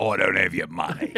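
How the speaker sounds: low, put-on Outback-style Australian accent. Making a joke about the Outback, the speaker says it in an Australian accent. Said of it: "That's an Australian".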